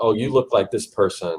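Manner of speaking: usual speaking voice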